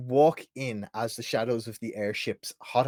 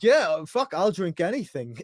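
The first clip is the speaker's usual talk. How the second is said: attempted bad Yorkshire accent, raised and high; 7 semitones higher, 6 dB louder than usual. Voicing an orc asked to drink something: attempted Yorkshire accent. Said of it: "so this is him now".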